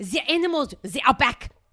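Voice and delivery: put-on German-accented speech. Speaker retells what the exchange student said to her mom: Johan impression, German-sounding accent. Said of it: "That was German maybe".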